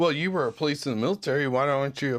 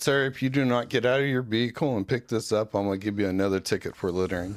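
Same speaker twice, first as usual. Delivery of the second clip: mock-calm, lower-pitched; 4 semitones lower than usual. Retelling a traffic stop, quoting the cop to the driver, imitating his calm. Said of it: "he was just calm".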